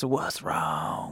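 low, soft Texas drawl. Showing someone what others think a sound says: Matthew McConaughey Texas voice. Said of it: "sounds straight up like some Matthew McConaughey Texas".

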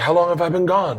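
very high, frantic, acted-out panicked voice. Retelling a film scene where the returning father asks: retelling a panicked line. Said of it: "and he's like panicked".

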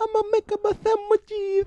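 put-on Italian American accent. Playing an italian american character in a comedy scene, italian american accent. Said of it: "you're making fun of my Italian descent?".

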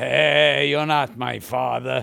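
comic character voice with long, roughened "hey". Doing a comedy bit, Chico Marx in Hamlet: Chico Marx voice. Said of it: "Chico Marx in Hamlet".

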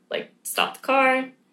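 tearful, high-pitched crying, pleading voice. Speaker retells panicking in the car with the driver, retelling a crying plea. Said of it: "And I'm like crying".

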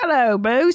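put-on cockney accent, male voice, boss pronounced as boos. Imagining how a Cockney British guy would say it, Cockney British accent. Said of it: "what if it's like a Cockney British guy? He's like".

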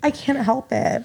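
tearful voice. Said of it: "You're crying".

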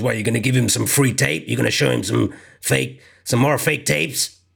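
rough, creaky put-on character voice. Retelling what he said about showing fake tapes: imitating the voice he put on. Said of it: "that voice he put".

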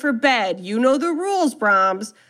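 put-on stern voice. Retelling a woman playing nanny to a man at bedtime, retelling stern talk. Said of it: "talk sternly to him".

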